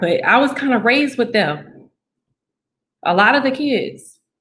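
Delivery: high, choked-up voice, holding back tears. Speaker recalling being raised with them, trying not to cry. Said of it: "I'm trying not to cry".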